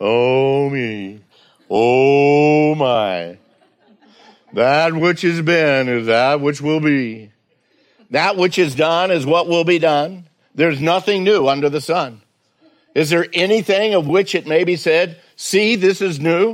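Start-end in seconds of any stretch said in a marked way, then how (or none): 0.0-10.3 gloomy, mopey donkey voice, drawn-out "oh". Speaker reading verses from Ecclesiastes to listeners, in an Eeyore voice. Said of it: "voice and in the tenure or the tone of Eeyore".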